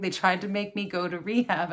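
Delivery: ordinary talk, nothing marked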